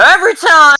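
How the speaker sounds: ear-splitting, shrill, high-pitched, very loud bellow. Voicing a deafened character who can't judge his own volume: very loud deafened shout. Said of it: "It's real loud".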